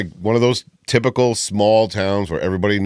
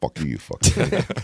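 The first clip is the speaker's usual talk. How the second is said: imitated muttering under the breath, lower in pitch; 5 semitones lower, 4 dB quieter than usual. Retelling own past words to complaining grocery customers: imitating muttering under breath. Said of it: "But under my breath".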